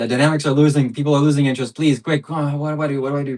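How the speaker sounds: high, rushed, frantic, fully panicking, pleading tone. Searching the settings, worried about people losing interest: panicking. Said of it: "I'm panicking, I'm panicking".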